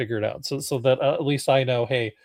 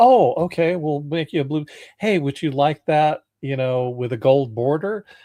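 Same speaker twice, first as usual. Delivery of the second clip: mock tongue-in-cheek, facetious, overly obliging eager tone; 3 semitones higher, 4 dB louder than usual. Retelling an exchange with an AI assistant: imitating a facetious tone. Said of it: "I'm being very facetious here".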